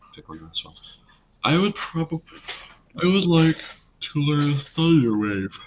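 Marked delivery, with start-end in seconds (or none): 1.4-5.5 speaking through a yawn, much higher, slower. Player choosing a spell to learn during an episode, yawning while talking. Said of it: "I was yawning".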